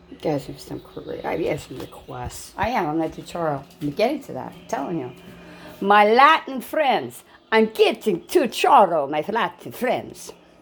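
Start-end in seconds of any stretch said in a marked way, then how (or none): 5.8-10.3 loud, booming, swooping vampire accent. Addressing his Latin friends, in a voice sounding like Count Dracula. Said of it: "That sounded like freaking Count Dracula".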